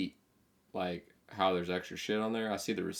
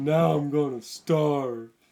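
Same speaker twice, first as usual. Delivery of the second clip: high, cartoon-style shout; 8 semitones higher, 8 dB louder than usual. Joking about being broke: Patrick Star voice. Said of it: "like Patrick Star".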